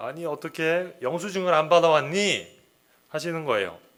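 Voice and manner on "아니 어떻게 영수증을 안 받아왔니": mock startled, raised voice, mildly irritated. Retelling how the mother asked about the missing receipt: imitating a surprised, slightly annoyed voice. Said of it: "놀라시면서, 그리고 약간 짜증 섞인 목소리로".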